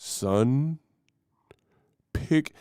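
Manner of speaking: put-on booming deep voice. Quoting a parent's advice in a James Earl Jones voice. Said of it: "I make my dad sound like James Earl Jones".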